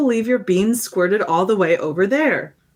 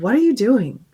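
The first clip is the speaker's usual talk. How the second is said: fed-up, exasperated tone; 2 semitones higher than usual. Reading a letter aloud, retelling the writer's question: imitating an exasperated tone. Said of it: "in an exasperated tone".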